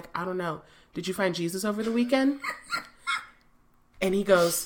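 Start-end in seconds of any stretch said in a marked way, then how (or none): 0.1-2.4 deadpan, straight-faced delivery, quieter. Retelling own reply to him at the window: retelling a deadpan reply. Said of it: "with a straight face".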